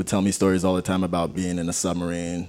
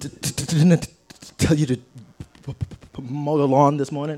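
mock heavy stutter, much higher pitch; 8 semitones higher, 4 dB louder than usual. Asked for an impression of a man who stutters, imitating a heavy stutter. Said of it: "You your impression?".

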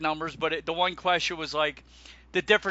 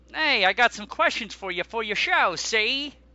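put-on old-time thirties mobster gangster voice; 5 semitones higher than usual. Retelling what Donna said to you, in a 30s gangster voice. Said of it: "30s gangster".

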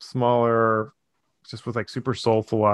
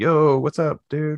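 put-on Brooklyn accent, pitched up a bit; 5 semitones higher than usual. Showing how a performer talks before someone says action, imitating Andrea's Brooklyn accent. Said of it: "she has like a Brooklyn accent".

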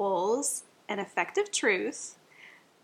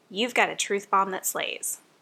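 usual speaking voice

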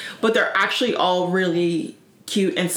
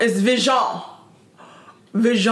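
put-on French accent, higher; 3 semitones higher than usual. Retelling how the daughter said a name: imitating daughter's french accent. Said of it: "this French accent".

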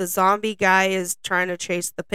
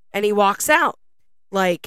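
normal talking voice

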